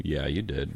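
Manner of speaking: soft, low whisper, said aside.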